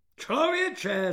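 high, exclaimed voice. Narrator reads a superior roaring at a soldier: roaring. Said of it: "zařměl".

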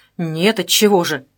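somewhat irritated. Kholmov answers Zhenya's question as he sits on her bed, somewhat irritated. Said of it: "несколько раздраженно ответил Холмов".

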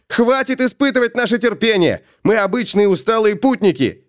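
calling out in a high, ringing yell. Felix, beside Gotrek, calls out to those beyond the door, shouting. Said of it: "прокричал Феликс".

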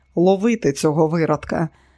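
ordinary delivery

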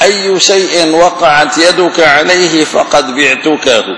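normal talking voice

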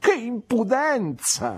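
sharp, very high, swooping exclamation. Peggotty reacts to what the narrator has just told her, exclaiming. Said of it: "esclamò Peggotty".

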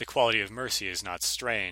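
normal talking voice

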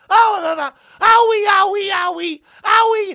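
very high, very loud, slow, drawn-out shrill screaming. Describing a movie scene where a man gets burned, reenacting a character screaming. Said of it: "He's screaming".

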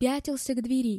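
plain reading voice

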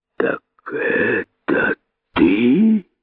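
hissed, hissing voice. The great python finally turns to the rabbit, hissed. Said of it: "прошипел великий питон".

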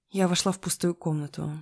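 plain

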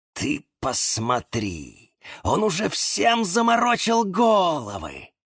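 huffy, offended hiss with swooping pitch. Reading a story aloud, the offended cactus speaks up; offended hiss. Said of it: "прошипел обиженный кактус".

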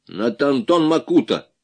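loud, blurted out without a thought. Malyanov answers Igor Petrovich's question: blurted out without thinking. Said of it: "ляпнул Малянов, не задумываясь".

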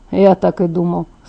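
plain reading voice

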